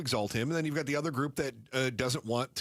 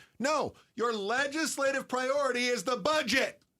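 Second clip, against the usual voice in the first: very high, emphatic, drawn-out yelling; 12 semitones higher than usual. Complaining about the legislators to the other speaker, yelling. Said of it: "Why are you yelling?".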